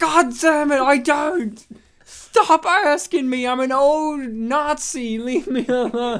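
very slow, high, loud, drawn-out, exasperated, annoyed rant. Acting out a man pestered by neighborhood kids: imitating an annoyed Keenan Kel. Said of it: "he fucking hates that show".

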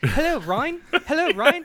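high, loud voice in a British accent.

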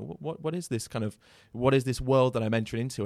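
ordinary delivery

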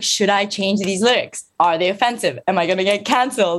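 ordinary talk, nothing marked

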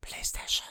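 very hushed, whispered robotic machine voice. Imitating how the name was said in commercials: imitating the PlayStation whisper. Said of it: "which is kind of a whisper".

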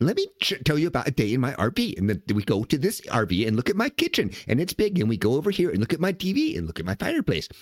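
rapid, choppy social-media influencer patter. Mocking RV reels on social media, in a quick chopped voice. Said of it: "this real quick chopped voice".

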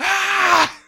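very high, loud panicked freaking-out scream.

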